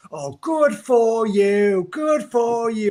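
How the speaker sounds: belted high, loud and slow. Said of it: "I can only do the".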